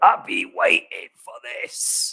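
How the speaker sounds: hushed, breathy, whispered put-on voice. Repeating a line for those who missed it, Kev voice. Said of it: "I'll I'll try and do it my best Kev voice".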